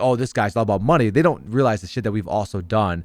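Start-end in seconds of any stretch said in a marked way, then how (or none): none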